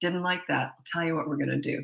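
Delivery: real quiet, calm, steady parent-like voice. A parent demonstrates the tone of voice used when disciplining: real quiet, calm. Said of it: "That's when you go real quiet".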